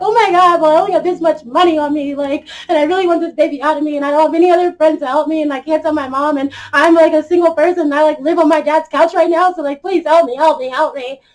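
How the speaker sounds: mock frantic, panicked, high, loud pleading. Retelling begging clinic staff for help, imitating a frantic plea. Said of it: "Okay, calm down".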